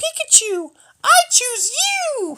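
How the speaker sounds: really high voice, way up top. Speaker explaining how to pick your strongest card, calling it in a really high-pitched voice. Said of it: "in this really high pitched voice".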